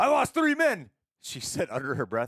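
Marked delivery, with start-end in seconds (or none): 0.0-0.9 very high-pitched, loud shouted delivery. Retelling a scene from the movie: imitating a character shouting. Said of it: "when he shouts".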